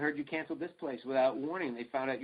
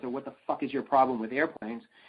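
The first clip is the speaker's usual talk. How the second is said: mock livid, furious outburst; 5 dB louder than usual. Retelling the first thing said to a man who arrived hours late, acting livid. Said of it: "I'm livid".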